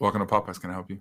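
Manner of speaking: imitated depressed voice. Acting out ordering food at popeyes, imitating a depressed worker. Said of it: "because she was very depressed".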